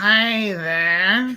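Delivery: classic cartoon hound voice. Doing the cartoon voices named by another speaker: Huckleberry Hound voice. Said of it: "Huckleberry Hound".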